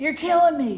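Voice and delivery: high, loud fake little-kid coughing and complaining. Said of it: "He goes".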